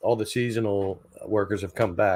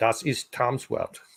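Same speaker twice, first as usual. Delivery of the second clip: fake German accent over the phrase; 3 semitones higher than usual. Saying a German phrase about Tom's world: put-on German accent. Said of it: "Was it a good accent?".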